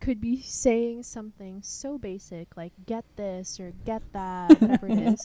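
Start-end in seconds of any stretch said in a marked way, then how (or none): 2.9-4.6 put-on yelling, louder. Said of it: "it'll sound like she's yelling".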